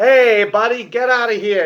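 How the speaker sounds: put-on Italian-American wise-guy mobster accent. Describing Australian actors playing Italian mobsters in a movie: wise guy mobster accent. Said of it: "trying their best to do the wise guy kind of".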